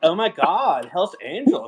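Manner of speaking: put-on Californian accent, swooping high. Echoing the host's impression of visiting girls from Ventura, in a put-on Californian accent. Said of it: "It was a little bit Cali".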